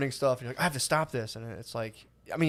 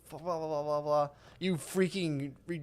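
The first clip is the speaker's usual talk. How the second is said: put-on furious, angry yelling, quieter; 2 semitones higher, 6 dB quieter than usual. Retelling a road rage fight, hitting the car doors: imitating an angry outburst. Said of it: "I was pissed".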